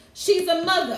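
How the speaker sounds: New York voice, done for show. Reading a tarot card about a woman, in a New York accent. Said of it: "in my New York voice".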